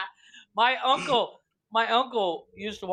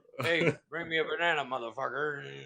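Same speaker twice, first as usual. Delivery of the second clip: put-on lazy gorilla voice, lower and quieter; 5 semitones lower, 5 dB quieter than usual. Joking about a friend as a lazy gorilla, imitating a lazy gorilla. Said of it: "the lazy gorilla that says".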